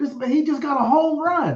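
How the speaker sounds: put-on very high-pitched shriek in elderly woman voice. Retelling a grandmother screaming while watching football: imitating grandmother screaming. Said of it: "she was just screaming".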